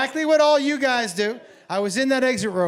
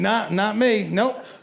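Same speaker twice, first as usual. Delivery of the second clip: plain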